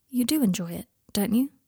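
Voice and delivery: unsure, tentative, uncertain tone. Questioning someone who has just forced a smile, asking uncertainly.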